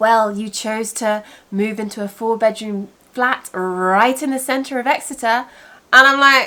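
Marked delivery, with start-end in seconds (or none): 0.0-5.4 play-acted, heavily sarcastic tone. Retelling a reply from the council tax office: imitating a sarcastic reply. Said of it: "I got a very sarcastic".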